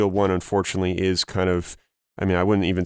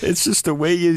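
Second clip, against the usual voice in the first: high, loud, apologetic laughing and giggling. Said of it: "I don't know why I'm laughing".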